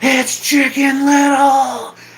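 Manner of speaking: mock very high, top-of-the-lungs drunken yell. Retelling a drunk guy at the Macy's Day Parade, imitating his yelling at the top of his lungs. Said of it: "yelling, ... at the top of his lungs".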